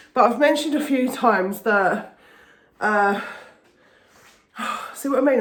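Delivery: breathless, out of breath. Talking to the camera about a stressful job: out of breath. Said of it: "I'm getting out of breath real quick again".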